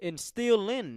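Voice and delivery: the word instilling clearly emphasized. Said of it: "I want to emphasize the word instilling".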